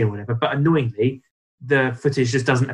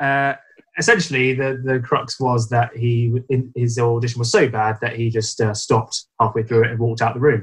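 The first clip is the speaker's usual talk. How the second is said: ordinary talk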